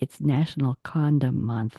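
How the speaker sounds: low, hushed, mock-secretive, mock-discreet aside. Listing February observances so nobody gets upset: very quietly. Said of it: "I'm going to say this very quietly".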